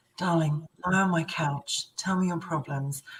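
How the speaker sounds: put-on low bedroom voice. Describing the voice that comes out when something is close to the heart, put-on low bedroom voice. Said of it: "that bedroom voice that you put on and go".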